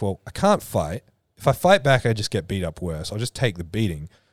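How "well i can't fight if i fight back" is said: usual speaking voice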